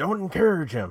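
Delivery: loud, high-pitched hollering yell. Retelling how someone getting his butt kicked yelled at a fan, retelling a yell. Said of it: "he's yelling at the fan".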